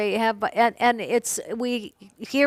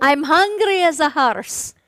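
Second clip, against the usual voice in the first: attempted Irish accent, higher; 6 semitones higher, 4 dB louder than usual. After saying they speak Irish, the speaker offers one phrase in an attempted Irish accent. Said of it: "I speak Irish".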